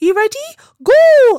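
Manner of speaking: put-on very high, very loud small voice with Geordie accent. Quoting the chosen voice that eggs the speaker on: Sarah Millican's Geordie voice. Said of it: "her little Geordie voice".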